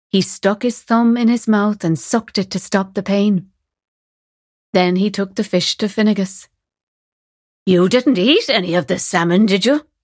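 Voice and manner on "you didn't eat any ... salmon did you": suspicious, worried, voice squeaking. Finnegas questions Fionn about the salmon he brought, suspicious, squeaking with worry. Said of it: "Finnegas asked suspiciously, his voice squeaking with worry".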